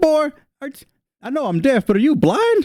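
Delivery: tiny, very high-pitched halfling character voice. Voicing a deaf halfling who mocks a player's missed shots: voicing the halfling. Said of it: "the halfling's just like".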